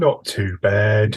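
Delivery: put-on slow, flat, glum British accent. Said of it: "that's the best we can manage".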